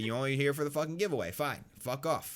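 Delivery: acted sarcastic tone. Describing what the speaker says to people who only come for giveaways, retelling a sarcastic remark.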